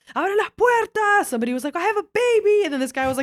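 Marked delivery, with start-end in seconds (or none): 0.2-1.3 high-pitched, panicky, freaking-out scream. Recounting stuck people who started freaking out, retelling people screaming. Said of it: "They started screaming".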